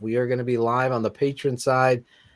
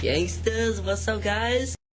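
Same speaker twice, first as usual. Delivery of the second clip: mock obnoxious, very high-pitched, hyped-up voice; 10 semitones higher than usual. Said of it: "It's the most obnoxious moment".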